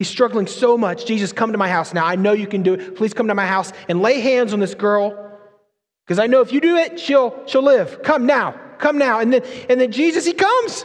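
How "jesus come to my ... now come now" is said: put-on desperate, pleading tone. Retelling a desperate father begging jesus to come: acting out a desperate plea. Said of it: "He's so desperate".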